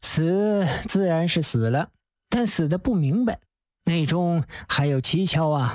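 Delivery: plain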